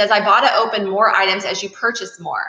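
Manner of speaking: usual speaking voice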